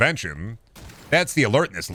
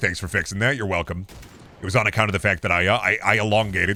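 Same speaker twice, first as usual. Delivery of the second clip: ordinary talk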